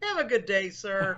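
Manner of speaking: put-on, sweetly polite, sugary, false tone. Acting out what they would say to someone flagged: mock-friendly, said with a smile. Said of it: "they would say it with a smile".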